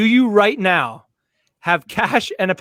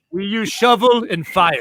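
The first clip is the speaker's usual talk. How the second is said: basic put-on Russian accent. Playing a robber planning to rob a store; basic Russian accent. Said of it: "Kate did a ve cl basic Russian".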